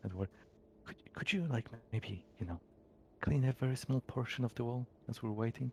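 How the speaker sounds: hushed whisper. Playing a character in a tabletop game, the speaker asks Edward something: whispering. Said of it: "I'm I'm whispering, by the way".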